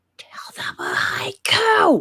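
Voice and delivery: slow, deliberate, carrying stage whisper meant to be overheard. Stage-whispering to someone on stage, loud enough for him to hear: loud stage whisper. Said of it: "stage whisper, so it's loud enough that he can hear it".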